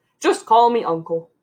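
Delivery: big, hearty pig character voice. A pig called Uncle answers Charlotte's question in a big, hearty voice. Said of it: "he said in a big, hearty voice".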